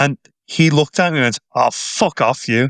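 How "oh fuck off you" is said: slow, flat-out, dead angry, furious delivery. Retelling a rival fan's reply at a stadium turnstile: imitating a dead angry retort. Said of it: "And dead angry".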